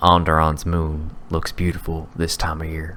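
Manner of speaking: said under the breath. Saying a code phrase in character to a contact, under the breath. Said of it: "kinda just under my breath".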